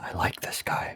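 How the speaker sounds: soft, hushed, breathy whisper. Whispering an in-character aside to a fellow player: whispering in character. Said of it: "I'm just gonna whisper to Thurston".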